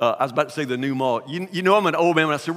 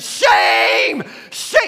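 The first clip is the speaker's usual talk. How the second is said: put-on old woman scream, higher and louder; 5 semitones higher, 6 dB louder than usual. Retelling an old lady with a walker screaming at the speaker and a companion, imitating her scream. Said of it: "because she's screaming".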